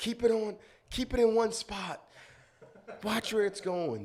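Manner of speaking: put-on very high, shouted captain voice. Retelling a fishing trip, the captain giving orders: imitating the captain yelling. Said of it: "the captain's yelling, like".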